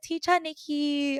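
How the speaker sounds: put-on high Thai-accented voice. Retelling how students called their teacher: imitating thai students' speech. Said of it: "They actually talk like this".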